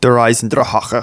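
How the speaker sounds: words pronounced the German way, German accent. Naming the greatest zombie map with a German accent on Der Eisendrache. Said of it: "You have to say it like that, ... the accent of where it originated from".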